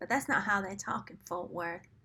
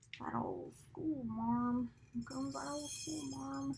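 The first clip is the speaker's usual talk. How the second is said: put-on East Texas accent; 4 semitones higher, 9 dB quieter than usual. Quoting a grandfather's phrase in an East Texas accent. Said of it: "So that's where I go with my accent".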